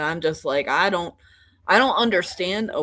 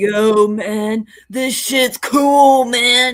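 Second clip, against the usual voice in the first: loud, high California surfer dude voice; 6 semitones higher, 8 dB louder than usual. Speaker imitates how two brothers from out West sound; beach bum voice. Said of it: "Beach Bum".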